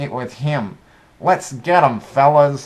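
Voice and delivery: tiny geeky voice. Retelling a scene where a geeky guy blames a big guy, tiny little geeky voice. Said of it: "this tiny little geeky voice".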